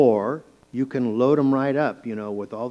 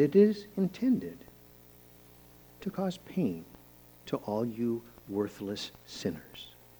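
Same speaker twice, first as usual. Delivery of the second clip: very calm voice, quieter; 8 dB quieter than usual. Speaker showing listeners how a harsh word can be said: harsh words said very calmly. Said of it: "There, I just did that".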